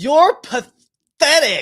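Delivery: very high, shrill, loud, outraged lady's accent. Quoting a lady who gets mad, the speaker imitates her angry accent. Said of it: "this lady's accent when she gets mad".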